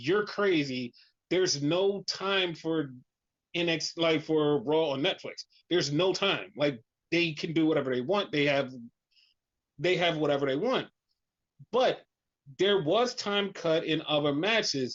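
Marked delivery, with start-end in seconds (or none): none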